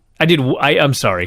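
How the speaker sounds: plain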